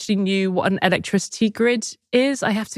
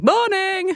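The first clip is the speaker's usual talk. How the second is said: shouting. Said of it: "Except that you were shouting".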